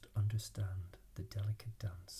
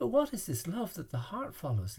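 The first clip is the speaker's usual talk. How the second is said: breathless, pitched very high; 10 semitones higher, 8 dB louder than usual. A narrator reads a character's eager question in a spiritual story: asking breathlessly. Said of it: "Little Spirit asked breathlessly".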